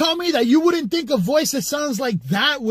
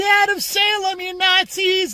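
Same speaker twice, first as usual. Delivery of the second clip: little high feminine voice, slow, fake tough; 6 semitones higher than usual. Explaining a running joke with a friend, imitating Jacob's feminine tough voice. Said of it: "like that little feminine ass voice trying to be strong".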